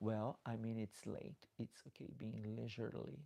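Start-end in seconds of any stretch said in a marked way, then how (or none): none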